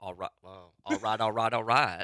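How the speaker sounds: put-on Southern accent. Asked by another speaker to redo the catchphrase: Matthew McConaughey impression. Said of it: "Try it with the Southern accent".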